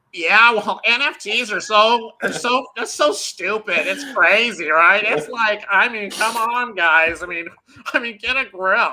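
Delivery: high, loud, exasperated griping rant. Speaker mocks a man he'd be nicer to, doing his Beeple voice. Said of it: "my Beeple voice".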